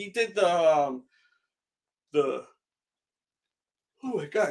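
mid-yawn speech. Describing the art guy's work, interrupted by a yawn: yawning. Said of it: "excuse me, I'm yawning".

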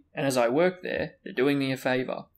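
ordinary delivery, nothing marked

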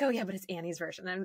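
imitated joking tone. Retelling what she replied, imitating her joking tone. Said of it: "she kind of like said it jokingly".

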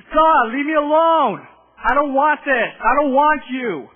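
full-lunged yelling, very loud and high. Recalling closing his bedroom door and shouting at him, retelling yelling at him. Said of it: "just yelling at him".

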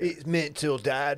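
put-on bad British accent. Talking to Dad about Love Island, in a bad British accent. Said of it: "You guys have really bad British accents".

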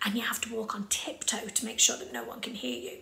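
very quiet, soft, unvoiced whisper. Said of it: "very quietly".

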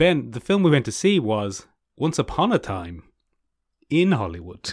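sing-song tune, stress on all the wrong words.

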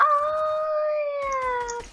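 high, slow, shouted mock babushka call. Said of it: "He shouted out".

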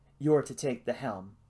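ordinary delivery, nothing marked

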